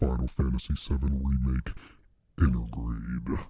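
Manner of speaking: put-on, low, demonic voice. Announcing a game title, trying out a demon voice. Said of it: "I could do the demon voice".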